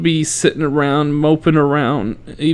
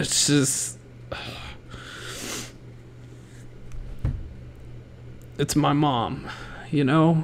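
whispered, hushed, emotion breaking through; 11 dB quieter than usual. Talking about a mother whose life is coming to a close; getting emotional. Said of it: "I'm getting emotional".

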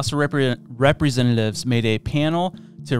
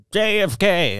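put-on Boston-accented voice; 7 semitones higher than usual. Saying the name again after being asked for the voice: JFK voice. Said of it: "You have to say that in the J F K voice".

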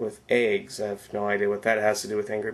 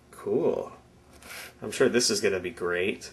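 mocking, sarcastic delivery. Unboxing a cheap knockoff handheld game on camera: sarcastic. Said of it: "he says sarcastically".

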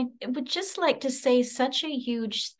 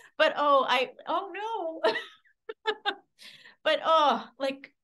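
tearful, emotion breaking through, near crying; 3 semitones higher than usual. Thanking everyone and becoming emotional; tearful, starting to cry. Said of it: "as I start crying".

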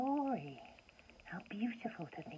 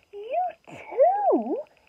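astonished, high, surprised cry, overly stretched out; 17 dB louder than usual. The little bear turns toward the voice behind him and gives a surprised cry. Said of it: "he cried in surprise".

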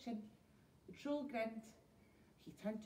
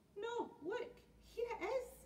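very high cried-out call; 9 semitones higher than usual. Peg Polka Dot calls to her friends digging for treasure; crying out. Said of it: "cried Peg Polka Dot".

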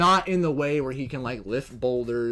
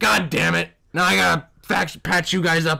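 sarcastic put-on robot voice, higher and louder; 4 semitones higher, 5 dB louder than usual. Pitching a voice for a sarcastic medic droid: Red Foreman voice. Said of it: "Now picture fucking the robot being like".

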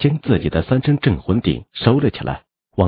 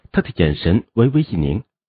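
plain reading voice

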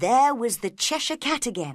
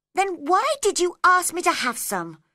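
irritated, cross, very high-pitched tone; 9 semitones higher, 4 dB louder than usual. Reading Alice as she answers the March Hare at the table, cross. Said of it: "said Alice crossly".

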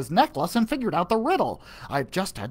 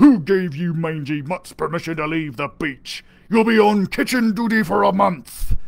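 growled pirate voice; 5 dB louder than usual. Narrating the pirate Rotten Tooth catching the crew leaving the beach, growling. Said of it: "he growled".

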